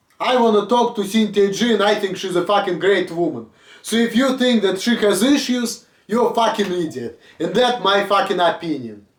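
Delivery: plain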